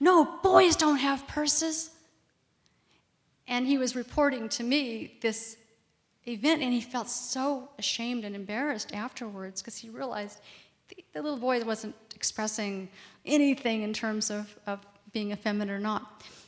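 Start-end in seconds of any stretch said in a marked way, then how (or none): 0.0-1.9 loud, high, slow angry yell. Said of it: "he just yelled at his eighteen-year-old son".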